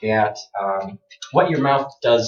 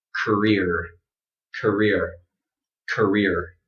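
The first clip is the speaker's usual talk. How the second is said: career said with heavy American r; 3 semitones lower, 4 dB quieter than usual. Showing learners how career sounds in an American accent: American pronunciation, strong R. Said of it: "but in my accent, it would sound like this".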